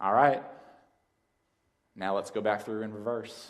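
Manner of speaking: put-on drawling West Texas accent. Retelling what granddad said to the boy at a gate: West Texas drawl. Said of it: "says in that West Texas drawl".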